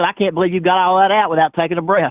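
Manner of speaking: normal talking voice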